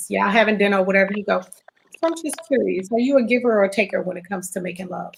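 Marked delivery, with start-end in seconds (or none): 2.0-5.1 voice lowered right down for effect. Showing how to ask a partner over dinner: dropped, lowered voice. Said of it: "Did you see how I just dropped my voice?".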